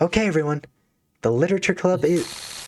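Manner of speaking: loud, high-pitched made-up character voice. Reading a game character's line aloud, playing her: higher-pitched put-on voice. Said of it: "I'm just gonna make my voice higher pitched".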